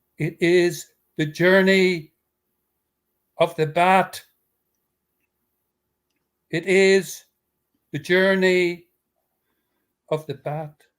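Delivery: slow, grand, celebratory kingly proclaiming voice. Reading a tale aloud, the king announcing the riddle's answer: celebratory kingly voice. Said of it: "in his most celebratory, kingly voice".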